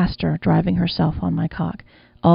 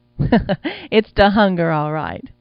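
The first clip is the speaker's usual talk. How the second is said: laughing aloud, very drawn out, slow and swooping. She replies to the narrator: laughing aloud. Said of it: "she laughed aloud".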